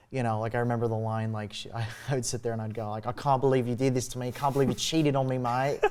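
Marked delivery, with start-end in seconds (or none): 3.0-5.8 put-on lines read aloud in an Australian accent. Recalling reading her breakup text aloud for the teacher, in an Australian accent. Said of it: "read her breakup text in an Australian accent".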